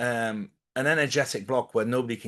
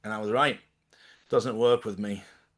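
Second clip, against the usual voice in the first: ordinary delivery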